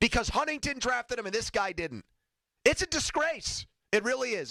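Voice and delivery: high, agitated, heated, worked-up delivery. Ranting about the team being shut out five times: worked up. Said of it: "I'm sorry I'm worked up today".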